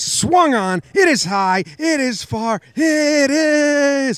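very high radio announcer's call, stretched out. Trying the impression again after the first attempt was called bad: home run call impression. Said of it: "I'm going to try again".

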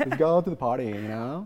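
put-on California valley girl voice with valley girl accent. Asked to do an american accent, the speaker goes to the valley girl accent. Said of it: "everybody goes to the Valley Girl accent".

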